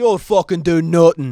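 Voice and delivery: put-on very loud, high, bellowed Irish accent. Explaining how they manage an Irish accent, quoting Conor McGregor in his Irish accent. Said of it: "if I have to do any accent, like Irish accent".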